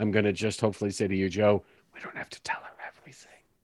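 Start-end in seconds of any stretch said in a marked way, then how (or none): 1.9-3.3 breathy, hushed stage whisper. In a roleplay, speaking to a companion so another won't hear, whispering. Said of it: "as sort of whispery as I possibly can".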